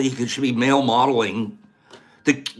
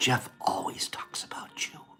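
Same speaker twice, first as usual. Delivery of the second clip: whispered voice, much quieter; 13 dB quieter than usual. Speaker retells what a woman whispered during a hug: retelling a whisper. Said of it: "She whispers in a big".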